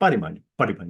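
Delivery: really fast, rushed, words run together. Showing how to say a term as one word: said really fast. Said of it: "You just say it really fast".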